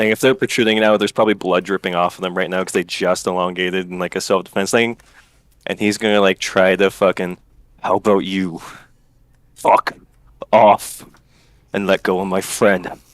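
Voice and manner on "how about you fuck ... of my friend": slow, defensive, snarling delivery. Playing a character who intimidates someone into letting go of a friend: snarling under his breath. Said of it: "try to snarl under his breath".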